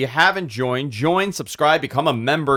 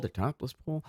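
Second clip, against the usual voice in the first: very soft, barely audible, hushed whisper; 14 dB quieter than usual. Announcing live show plans to viewers, whispering so YouTube won't hear. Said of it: "I gotta whisper it every time".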